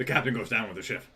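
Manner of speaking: words spoken around a mouthful of candy. Saying goodbye to listeners until monday, speaking with candy in the mouth. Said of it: "Let me try that one more time without the candy in my mouth".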